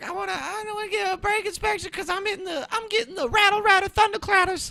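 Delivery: very high, really loud, shrill, screechy voice. Acting out a woman's phone call, in a really loud, screechy voice. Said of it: "really loud, really screechy".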